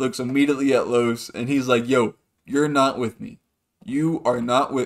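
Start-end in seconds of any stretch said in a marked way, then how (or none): 1.9-4.9 suddenly grave, no-nonsense tone, acted out. Retelling how Kai suddenly warned someone off: imitating Kai turning serious. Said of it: "he gets so serious".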